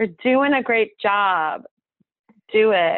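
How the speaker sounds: put-on drawn-out New York accent. Speaker quoting a woman she recorded, imitating her new york accent. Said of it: "That's her accent".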